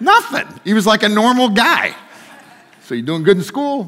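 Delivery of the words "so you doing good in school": put-on casual, everyday-sounding New Jersey accent. Retelling a man's question to a kid over lunch, in a New Jersey accent. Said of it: "he had this, like, New Jersey accent".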